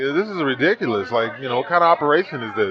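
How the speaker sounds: plain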